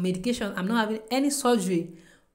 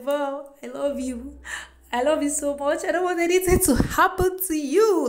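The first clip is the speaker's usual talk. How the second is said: put-on high, tearful crying voice; 7 semitones higher, 4 dB louder than usual. Retelling a man's visit to a woman before her surgery, imitating him crying. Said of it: "he was crying".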